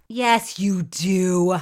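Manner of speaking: loud, booming, low, deep-voiced shout. Insisting to the other speaker that they know the actor, loud deep-voiced yell. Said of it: "Don't yell at me with your deep voice".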